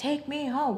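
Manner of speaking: put-on, high-pitched screaming. Retelling how a woman screamed at a man refusing to drive her home, screaming. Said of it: "I was like literally like screaming at him".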